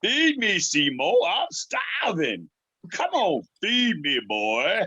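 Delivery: high pitch with wide pitch swings. Asked to do it again, reprising the voice of the Little Shop of Horrors plant. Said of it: "I did the voice of the plant in the Little Shop of Horrors".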